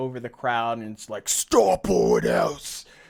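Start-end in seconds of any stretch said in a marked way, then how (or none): 1.3-2.8 loud, slow, booming, intimidating voice. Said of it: "there's this loud, intimidating voice".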